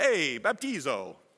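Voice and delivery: little put-on Italian accent, voice dropped. Speaker explaining a Bible verse slips into a little Italian accent. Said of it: "Little Italian accent".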